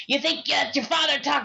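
put-on creepy clown voice. Retelling what a dummy in a movie said: Pennywise-like voice. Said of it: "he sounded like Pennywise".

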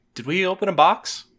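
open, loud, high exclaiming. Player's character looks at Gus, openly exclaiming. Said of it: "openly exclaim".

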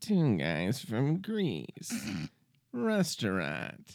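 slow, swooping, sing-song reading. Retelling a movie scene of reading signs aloud: imitating William Hickey. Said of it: "reading every sign him and Billy Crystal pass".

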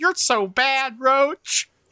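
very high, drawn-out, giggly, flirty teasing laugh. Retelling a woman laughing at a man's remark: imitating her laughing, into it. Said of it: "she's laughing like she's super into it".

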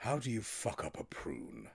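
slow, doleful, woebegone, mournful tone. Retelling how Humphrey Lyttelton jabbed at his breakfast: imitating Humphrey Lyttelton mournfully. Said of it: "mournfully just went".

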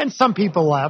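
ordinary delivery

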